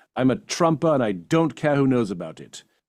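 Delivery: put-on British accent. Retell what a woman suddenly said to you on set, in a put-on british accent. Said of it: "in her British accent".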